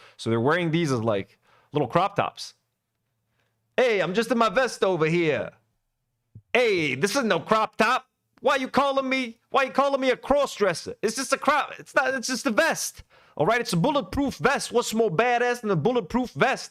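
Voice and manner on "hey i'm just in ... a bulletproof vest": put-on pitched-up New York man's accent. Giving a voice to the man shown in a picture, in a New York accent. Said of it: "Why am I making him sound New Yorker?".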